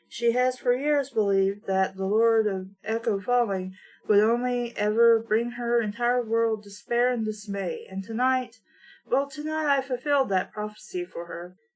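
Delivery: ordinary delivery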